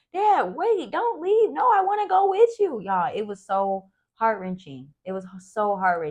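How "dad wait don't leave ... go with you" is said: acted very high, sobbing, wailing child's voice. Retelling a little boy begging his dad not to leave, imitating a screaming, crying child. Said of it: "was screaming, crying".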